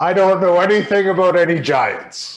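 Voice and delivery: put-on booming, echoing wizard voice. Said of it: "you guys hear a booming voice echoing".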